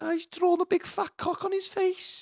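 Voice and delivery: put-on shrill, very high-pitched Liverpool Scouse accent. Retelling what a kid said on seeing the drawing: scouse accent. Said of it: "In a Sa-, a Scouse accent, he goes".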